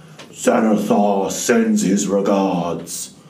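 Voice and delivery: put-on deep, loud orc voice with heavy orcish accent. Narrating an unseen voice speaking from behind the players, in a deep orcish accent. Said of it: "you hear in a deep orcish accent".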